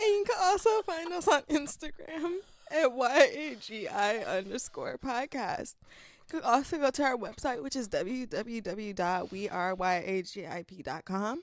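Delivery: fighting back laughter while speaking. Podcast host lists where to find the show, holding back laughter. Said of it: "because I was trying not to laugh".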